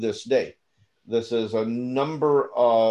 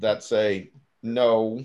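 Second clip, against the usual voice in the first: ordinary talk, nothing marked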